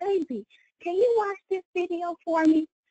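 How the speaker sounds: as sweet a voice as possible. Retelling asking her husband to watch a video: imitating her own sweetest voice. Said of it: "in the sweetest voice I could".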